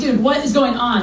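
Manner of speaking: ordinary delivery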